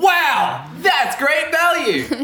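mock top-of-the-lungs shout, very high, very slow, drawn-out. Retelling a video of a shopper looking at an item: imitating a man shouting at top of lungs. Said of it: "he would just shout at the top of his".

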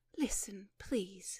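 solemn. A narrator reads a woman addressing a man, gravely. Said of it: "gravely addressed".

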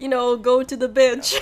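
put-on French accent. Retelling what a woman said that made them laugh; imitating a French accent. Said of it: "she had a French accent".

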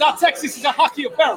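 high, put-on Jamaican accent. Reading something out as if he were jamaican, imitated jamaican accent. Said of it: "I read it as if I'm Jamaican".

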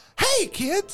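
very high-pitched character voice. Trying out a voice for a joke insurance ad: Mickey voice. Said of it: "that's still Mickey".

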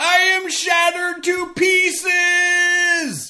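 put-on theatrical yell. Quoting a doctor who slips on stage: imitating a theatrical yell. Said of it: "He just yells".

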